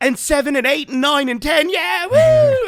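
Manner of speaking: excited, freaking-out yell. Retelling Ewan on stage answering a shout from the crowd: imitating Ewan freaking out. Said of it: "And he's like freaking out".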